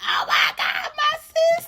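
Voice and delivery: put-on, very high screaming and crying. Retelling how a woman found the speaker laid out on the ground: imitating someone screaming. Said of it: "All I hear is her screaming".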